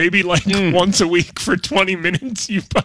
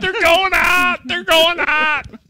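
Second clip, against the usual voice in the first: very high, mock yelling in pain; 12 semitones higher than usual. The speaker teases Bob about yelling while everyone else cheered, imitating Bob yelling in pain. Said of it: "you're just in your seat yelling in pain".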